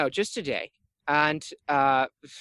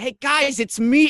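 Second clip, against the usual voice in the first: put-on voice, higher and louder; 10 semitones higher, 7 dB louder than usual. Voicing a disguised creature greeting the party: Ruckus voice. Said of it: "the voice sounds like me. Like Ruckus".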